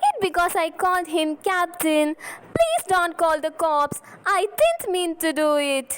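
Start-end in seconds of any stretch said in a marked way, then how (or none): 2.2-6.0 scared, desperate, panicked, frightened pleading tone. Acting a flower girl begging not to be reported: panicking. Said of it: "don't panic".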